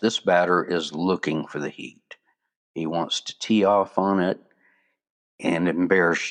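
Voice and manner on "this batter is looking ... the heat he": ordinary delivery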